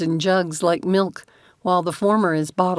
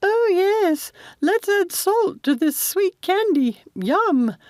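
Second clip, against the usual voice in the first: very high, slow, sarcastic, mocking put-on voice; 13 semitones higher than usual. A man jokes mockingly with a chuckle, mocking in a put-on higher voice. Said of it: "he pitched his voice higher".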